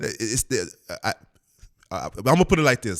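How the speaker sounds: stuttering. Trying to be careful what they say about lawyers, the speaker is stuttering. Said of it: "I know I'm stuttering".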